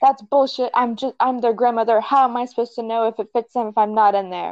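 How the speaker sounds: put-on huffy, indignant, angry old woman ranting. Retelling a grandmother yelling right in her face, retelling an angry yell. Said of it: "yelling at me".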